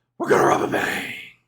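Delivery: breathy, squeezed into one syllable. Imitating how he says the line, breathy and run together as one word. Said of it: "he says it all in one syllable".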